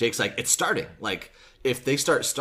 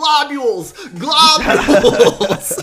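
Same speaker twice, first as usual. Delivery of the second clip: piercing, shrill, very loud, high-pitched scream; 13 dB louder than usual. Recounting a scene where a man is dragged out of a theater, retelling a scream. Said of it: "as he's screaming".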